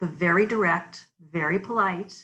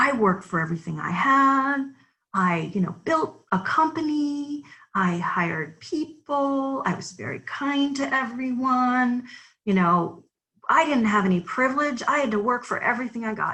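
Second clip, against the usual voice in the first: mock offended, upset, defensive, pitched-up protest; 5 semitones higher than usual. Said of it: "this person was so upset".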